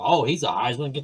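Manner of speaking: ordinary delivery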